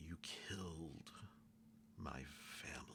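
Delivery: low, deep, whispered voice from the gut. Narrating a man who suddenly speaks in his own voice but lower: lower voice from the stomach. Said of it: "it's his voice, but it's lower".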